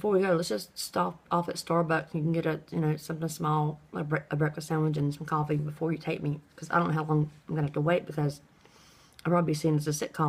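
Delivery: normal talking voice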